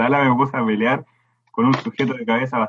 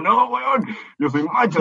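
disgusted, grossed-out, recoiling, pitched-up voice; 9 semitones higher than usual. Retelling own answer to what someone said: imitating own disgusted reply. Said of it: "Y yo como terrible asqueado".

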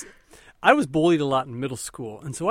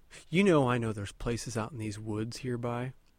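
put-on hushed voice, much quieter; 4 semitones lower, 6 dB quieter than usual. Speaker retelling their dad confronting a guy, imitating quiet speech. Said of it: "he gets real quiet".

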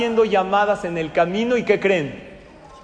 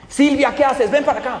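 mock furious, high-pitched, angry shout; 7 semitones higher, 3 dB louder than usual. Retelling a man calling the secretary over, retelling an angry shout. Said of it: "¿Por qué gritas?".

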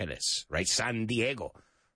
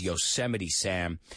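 ordinary talk, nothing marked

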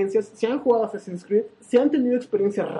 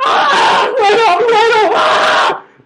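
shrill, very high, very loud, drawn-out scream; 12 semitones higher, 11 dB louder than usual. Retelling spotting a small creature at home: retelling a scream. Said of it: "yo grité, grité como, como, como todo un hombre".

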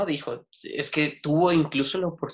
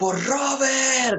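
mock, very high, charging war cry shout; 10 semitones higher, 4 dB louder than usual. Speaker retelling a fight where a man grabs his sword, reenacting his shout. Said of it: "gritó".

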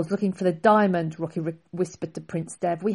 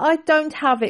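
stammering, much higher, louder; 9 semitones higher, 4 dB louder than usual. Reading a story, the narrator voices a character caught by the prince, stammering. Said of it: "Rocky stammered".

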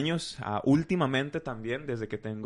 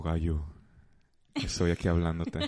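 put-on deep grave voice, lower pitch; 6 semitones lower than usual. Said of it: "profunda, así como".

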